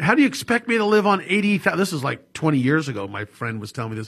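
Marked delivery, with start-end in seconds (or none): 0.0-1.8 put-on yelling, much higher. Retelling what an accountant's client yelled at him on a call: retelling a client's yell. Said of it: "yell at him".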